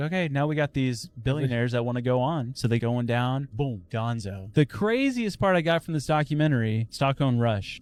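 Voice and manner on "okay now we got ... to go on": ordinary talk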